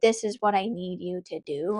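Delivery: normal talking voice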